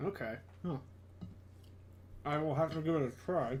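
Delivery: talking with mouth full. Replying to another speaker while eating, talking with mouth full. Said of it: "talking with my mouth, my mouth too full here".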